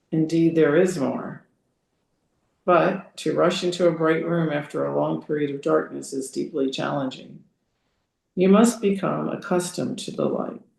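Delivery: normal talking voice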